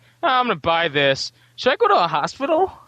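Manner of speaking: high, frivolous, foppish rich-playboy voice. Describing the acting Bruce Wayne, the foppish playboy: foppish playboy Bruce Wayne voice. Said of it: "the foppish playboy".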